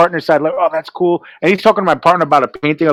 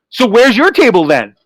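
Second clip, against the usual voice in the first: mock, cranky, irritable voice pitched up; 5 semitones higher than usual. Retelling a reply to an artist who said she was better: imitating own cranky retort. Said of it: "I was just cranky".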